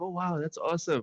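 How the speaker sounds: mock polite, high, forced, trying-hard enthusiasm. Retelling how she reacted to seeing Kojima, mock-supportive. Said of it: "like very supportive".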